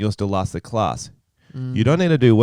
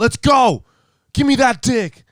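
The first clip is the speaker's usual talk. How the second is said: mock, very high, drawn-out, taunting holler; 13 semitones higher, 3 dB louder than usual. Retelling how a lineman yelled trash talk at opponents: imitating someone yelling. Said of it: "he would yell".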